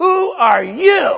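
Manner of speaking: put-on very high, loud, rasping, angry, upset voice. Voicing God's upset question to the people, in a mock-upset God voice. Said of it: "that's not a normal God tone".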